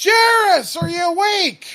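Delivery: very high, very loud, booming, drawn-out bellow. Narrating a scene, Therra walks into the front hallway calling for Jaris, bellowing. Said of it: "she just kind of bellows".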